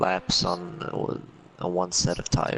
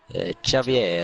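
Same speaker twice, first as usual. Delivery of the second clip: put-on Italian accent, louder; 4 dB louder than usual. Trying out how to say the debutant's name, in an Italian accent impression. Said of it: "my best uh, Italian impression".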